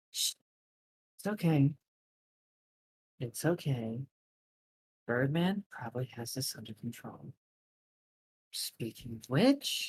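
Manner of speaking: soft, hushed, calming, soothing shushing whisper. A player voices her character whispering to another character, soothing whisper. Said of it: "she like whispers to Cash like".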